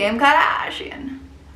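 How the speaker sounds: rough attempt at a New Jersey accent. Describing what a beauty influencer always says; Michaela impression, attempted New Jersey accent. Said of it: "I can't do the New Jersey accent".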